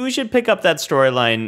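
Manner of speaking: high-pitched, loud, eager voice.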